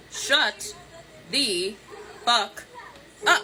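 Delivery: very slow, deliberate, drawn-out delivery. Speaking to someone so they can really understand, very slow and deliberate. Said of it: "I'm gonna say this for you real slow".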